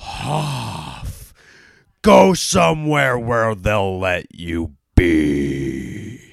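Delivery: put-on very slow fury, long drawn "be", swooping pitch. Retelling how he stood up, both hands on the desk, imitating insane rage. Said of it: "like insane rage".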